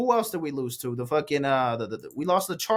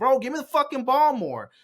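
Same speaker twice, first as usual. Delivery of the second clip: high-pitched mock scolding yell; 9 semitones higher than usual. Retelling how a receiver talks to his quarterback: imitating someone yelling and scolding. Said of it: "he's scolding him and is just yelling at him".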